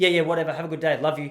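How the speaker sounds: icy, cold, indifferent, offhand dismissive tone. Imagining being cold back to her as payback, cold and indifferent. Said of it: "I'll be so cold back".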